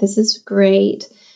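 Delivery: level, flat, uninflected monotone delivery. Teasing another speaker about their flat delivery: imitating a monotone delivery.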